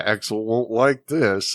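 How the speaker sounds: muttering under the breath. Retelling a character's line, imitating a mutter under his breath. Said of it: "kinda under his breath goes".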